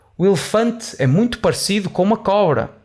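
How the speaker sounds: said aloud, pitched high.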